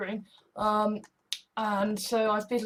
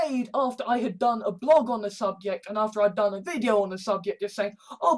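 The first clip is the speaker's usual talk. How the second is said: ordinary delivery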